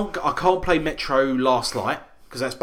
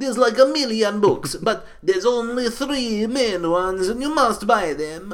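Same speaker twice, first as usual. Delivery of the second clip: heavy, laid-on put-on Russian accent, pitched up; 9 semitones higher than usual. Quoting people recommending the Metro books, doing the accent. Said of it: "but I'll do the accent".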